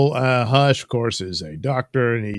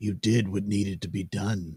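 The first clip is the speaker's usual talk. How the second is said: plain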